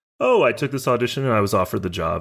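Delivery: ordinary delivery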